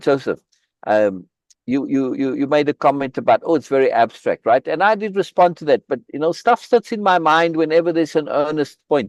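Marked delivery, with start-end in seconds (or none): none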